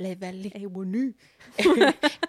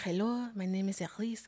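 slow, unconvincing put-on Russian accent; 8 dB quieter than usual. Replaying a murder mystery party character line: put-on Russian accent. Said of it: "I went Russian".

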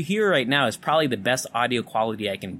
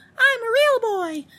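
put-on very high, tiny little boy voice; 4 dB louder than usual. Showing what character voice can be done: little boy voice. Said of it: "I could probably do, like, a little, a little boy".

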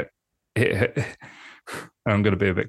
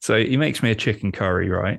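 ordinary delivery

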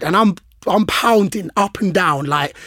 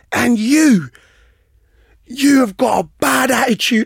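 screaming, high voice; 6 semitones higher, 3 dB louder than usual. Retelling how the gaffer turned on him, imitating someone screaming. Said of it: "he's screaming at me".

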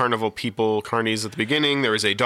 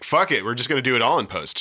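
usual speaking voice

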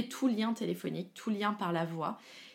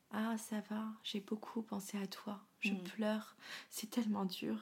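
small, very soft, sympathetic, pitying voice; 9 dB quieter than usual. Imitating people who phoned with pity: imitating a small pitying voice. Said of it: "ils prenaient une petite voix comme ça".

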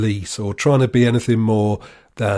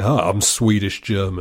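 mocking smug American man voice. Mocking an imagined six-foot-four American guy: imitating a smug American guy. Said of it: "he's like".

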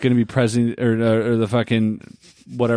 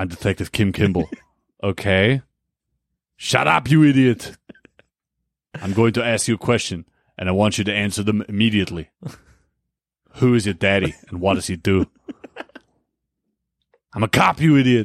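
heavy put-on Austrian accent throughout. Acting out a prank call made with soundboard buttons, in an Arnie voice with an Austrian accent. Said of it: "Is that Austrian?".

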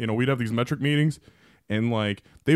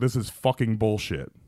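mock muttering under the breath. Retelling turning away after a woman's reprimand, muttering under one's breath. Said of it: "under my breath".

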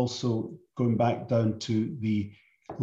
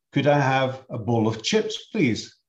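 best attempt at a put-on Welsh accent; 2 semitones higher than usual. Retelling how the listener asked a waiter in india for chips; put-on welsh accent. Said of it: "in your best Welsh".

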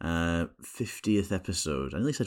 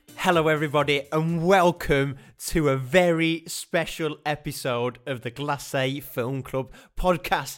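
bursting with excitement, super excited; 7 semitones higher, 4 dB louder than usual. Host opening a very special episode of the film club podcast, super excited. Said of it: "as you might be able to hear from my my voice".

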